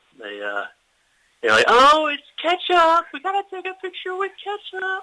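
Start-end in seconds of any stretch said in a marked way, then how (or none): 1.7-5.0 put-on, very high girly voice. Speaker retells what girls on the street said about his costume, in an impression of a girl voice. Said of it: "Is that your impression of a girl voice?".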